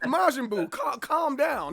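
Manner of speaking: slow, laughing, teasing, mock-soothing tone.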